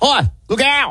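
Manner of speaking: put-on poor Australian accent, very high-pitched. Retelling a comedian's bit about Australians: bad Australian accent. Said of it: "I'm gonna not do a great Australian accent".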